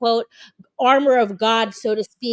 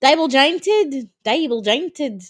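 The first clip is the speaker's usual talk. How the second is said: trying a put-on Australian accent; 3 semitones higher than usual. The speaker imagines how an Australian would say a word, in an attempted Australian accent. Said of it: "imagine how an Australian person would say".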